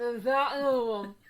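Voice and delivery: acted-out talking with mouth full. Picturing being uninvited staff carrying canapés, the speaker acts it out; mock talking with mouth full. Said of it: "with one in my mouth and going".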